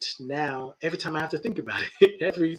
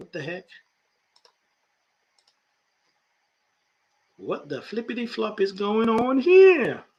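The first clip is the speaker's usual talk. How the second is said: high, swooping, bouncy comic delivery; 7 semitones higher than usual. Reacting while looking up a website: Tony Baker voice. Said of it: "In my Tony Baker voice".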